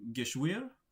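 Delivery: pitch rising through the word Geschwür. Describing the better pronunciation of a word, rising pitch through 'Geschwür'. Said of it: "it's got like an upward inflection to it".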